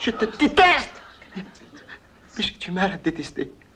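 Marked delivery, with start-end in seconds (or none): 0.0-1.0 very high, loud, full-out shouted outburst. Told to speak louder, repeating it: shouting. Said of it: "Parle plus fort!".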